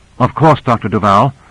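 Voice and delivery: ordinary talk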